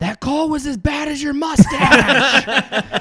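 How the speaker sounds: shrill, very high, loud, drawn-out yell. Retelling standing up to heckle an official over bad calls, retelling a yell. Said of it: "I stood up and I yelled".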